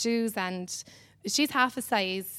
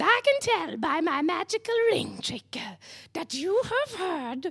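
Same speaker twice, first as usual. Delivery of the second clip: high, slow, drawn-out put-on storybook witch voice; 8 semitones higher than usual. Retelling what a witch said after a ring trick: put-on witch voice. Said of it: "Do you know she doesn't talk like that?".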